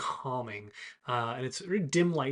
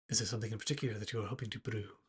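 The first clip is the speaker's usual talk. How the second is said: softly spoken, quiet, hushed voice; 3 semitones lower, 7 dB quieter than usual. An Eladrin figure comes around the corner and speaks up, quiet voice. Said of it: "a quiet voice from the back of the room".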